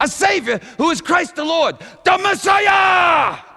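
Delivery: very loud, very high-pitched, frantic screaming. Telling the nativity story, acting out crazy shepherds screaming in the street. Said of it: "running around the street screaming".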